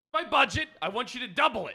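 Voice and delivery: high-pitched scream. Acting out a threat demanding the mayor double the budget: screaming. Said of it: "you don't have to scream".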